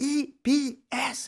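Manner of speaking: yelling, high-pitched, slow, drawn out.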